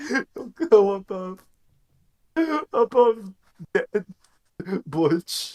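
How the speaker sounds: talking through laughter. Speaker describing a dude he calls a legend, laughing while talking. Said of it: "I can't help but laugh so much".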